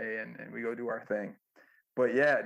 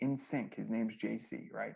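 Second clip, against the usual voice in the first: plain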